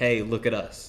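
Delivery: ordinary talk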